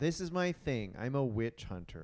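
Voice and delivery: ordinary talk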